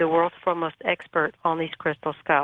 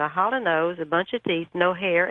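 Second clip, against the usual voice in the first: plain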